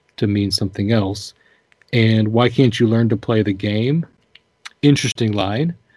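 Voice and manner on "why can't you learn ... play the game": usual speaking voice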